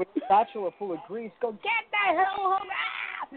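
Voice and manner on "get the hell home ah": very high, screeching, raging scream. Retelling a woman flying out of a restaurant: imitating someone screaming. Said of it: "screaming and throwing things".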